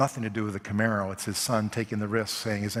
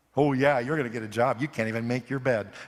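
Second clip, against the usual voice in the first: mock howling sounds. Retelling how three little sisters react to their brother, imitating sisters howling. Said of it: "they just howl".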